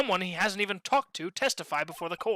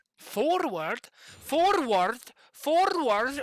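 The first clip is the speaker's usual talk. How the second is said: put-on Scottish accent, pitched up; 7 semitones higher than usual. Voicing a character's reply in a courtroom game: scottish accent. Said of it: "Why can I not say that in a Scottish accent?".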